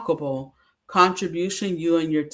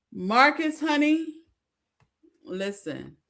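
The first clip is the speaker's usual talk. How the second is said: choked up, slow, swooping, fighting back tears; 9 semitones higher, 4 dB quieter than usual. Praising an honoree while trying not to cry: holding back tears. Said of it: "I don't wanna cry".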